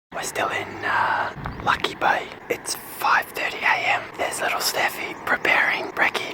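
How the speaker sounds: hushed whisper. Vlogging at 5:30 a.m. at a campsite, not wanting to wake other campers, whispering. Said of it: "I'm whispering because we're in a campsite".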